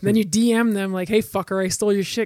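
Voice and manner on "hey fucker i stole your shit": hostile, in-your-face, aggressive and angry delivery. Acting out a dm to someone whose joke was stolen: mock aggressive, angry. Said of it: "really aggressive, angry".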